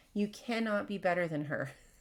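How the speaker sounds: normal talking voice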